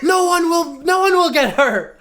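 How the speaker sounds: put-on panicked screaming. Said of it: "Leo's just screaming".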